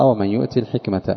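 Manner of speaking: ordinary talk, nothing marked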